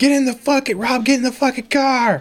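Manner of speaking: very high, screaming voice. Speaker retells a man screaming at him from inside the car, retelling a scream. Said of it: "He's screaming this from the inside".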